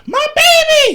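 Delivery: very high, loud, squealing wail. Retelling Carby's reaction when the creature got out: super high voice. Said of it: "her whole voice got super high".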